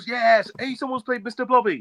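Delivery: play-acted, very high, excited squealing burst of joy. Speaker imagines another person's reaction on the live stream, mock celebrating. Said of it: "was like starting to celebrate".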